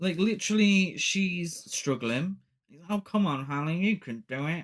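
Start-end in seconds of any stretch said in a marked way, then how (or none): 2.9-4.6 put-on condescending voice, higher pitch. Retelling a film scene, mocking how Rich talks down to Hallie: imitating Rich, condescending. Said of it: "a proper condescending prick".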